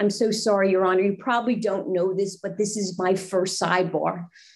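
mild, unassuming, apologetic tone. Retelling what she said to the judge at a sidebar, in a very soft voice. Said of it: "And I say in a very soft way".

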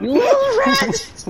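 furious yell.

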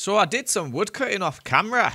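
Scottish accent slipping in. Describing wood cutting done off camera, in a Scottish accent. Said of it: "I've got a Scottish accent there".

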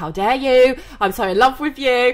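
put-on fuming, angry outburst tone. Retelling an angry phone call to an ex: imitating own past fuming.

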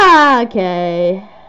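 startled, terrified scream, shrieking in fright.

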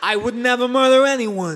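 put-on loud, snooty British butler accent.

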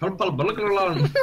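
put-on Scottish-accented voice. Asked to say a test phrase to show off a scottish accent. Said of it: "try and say purple burglar alarm with the Scottish accent".

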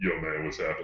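put-on deep voice. Retelling how the guys he played with greeted him, imitating a deep voice. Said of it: "this dude's deep voice was way deeper".

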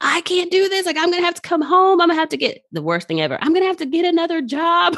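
play-acted very high, rushed, tearful bawling. Speaker retelling a phone call to their mom, re-enacting bawling. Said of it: "I'm like bawling".

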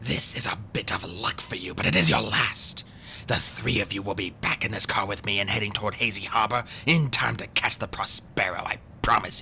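hissing voice. Stefano speaks to the three children as they try to leave, hissing. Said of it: "he hissed at them".

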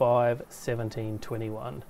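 ordinary delivery, nothing marked

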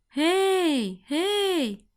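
shouting out. A little girl running to the sea calls to a creature in the waves, calling out. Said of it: "Еллі гукнула".

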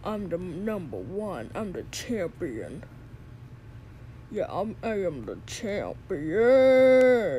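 strange bragging voice. In a skit, a character brags to another about going to the ring; odd boastful voice. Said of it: "why are you talking like that?".

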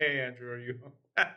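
heavy-handed, menacing, threatening tone. Retelling how the other speaker dropped a disc off: imitating a threatening tone. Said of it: "A very threatening manner where you were like".

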